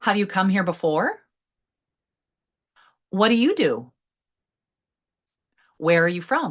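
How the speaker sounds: pitch lifting upward on the last words. Showing listeners how to pitch questions up, with rising question intonation. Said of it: "I let my voice pitch up".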